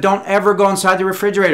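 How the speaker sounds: stern, high-pitched, loud and fast delivery.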